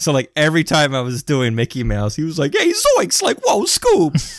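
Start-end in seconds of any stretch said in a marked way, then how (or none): 2.6-4.4 very high, swooping goofy voice, yelped badly. Retelling how a guy answered his Mickey Mouse voice, bad Shaggy impression. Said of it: "doing some like shitty Shaggy and Scooby impressions".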